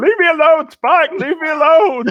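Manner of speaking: very high, loud screaming in terror. Voicing a fleeing outlaw who screams as a torch recedes: screaming in terror in character. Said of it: "He is screaming".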